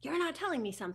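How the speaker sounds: fast, loud, accusing yelling.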